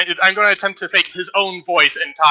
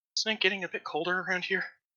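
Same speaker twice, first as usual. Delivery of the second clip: very quiet, grumbling mutter; 2 semitones higher, 16 dB quieter than usual. Imitating one guard's voice again to everyone, muttering in a guard's voice. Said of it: "imitate the voice of the one guard again, and mutter".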